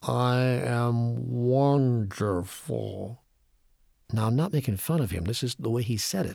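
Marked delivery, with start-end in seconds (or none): 0.0-3.2 very slow, careful delivery, each word placed deliberately. Quoting the master's reply from his wheelchair, Ram Dass, very slow and careful. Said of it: "said very slowly and very carefully".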